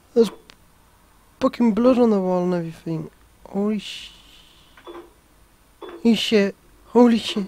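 terrified, scared out of their wits. Player reacting while playing a frightening game: terrified. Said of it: "I've never been this scared on a game in my whole life".

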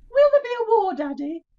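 very loud, high-pitched, put-on woman's voice. Retelling what John used to say before their stage introduction, in a lady's voice. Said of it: "He used to say in a lady's voice".

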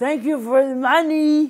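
put-on very high, slurred words. Retelling their own words while on painkillers, imitating slurred, drugged speech. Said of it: "with a slurred mouth".

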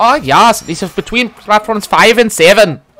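put-on loud, dead-earnest, serious German accent. Retelling what a train employee answered when asked for help: serious German accent. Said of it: "the most serious German accent you'll ever hear".

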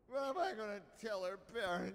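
put-on drunken, tipsy delivery. An acted character in a scene, speaking in a drunk voice. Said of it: "This drunk voice acting is so good".

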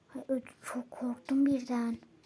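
sudden, startled and scared whisper.

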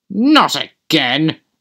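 irritated, put-out, cross, annoyed exclamation. An engine stuck on a hill with a heavy train says: cross. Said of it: "he said crossly".

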